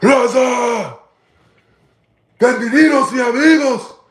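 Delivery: mock bone-chilling high war-cry yell, "Raza" stretched. Describing a leader rallying his people, the speaker imitates his war-cry yell. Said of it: "he be yelling that shit".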